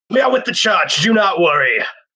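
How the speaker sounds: bold, heroic, triumphant manly call, pitched high. Narrating a game character's action, then delivering the line in a triumphant, manly yell. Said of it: "I yell in a triumphant, manly voice".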